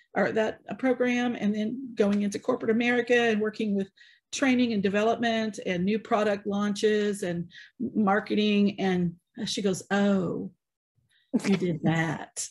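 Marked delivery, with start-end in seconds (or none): 10.0-12.5 play-acted, very slow, snooty, snobbish drawl. Retelling a woman's reply at a film festival party: imitating a snobbish woman. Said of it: "in exactly the tone".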